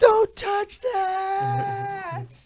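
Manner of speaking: mock yelling, high and drawn-out.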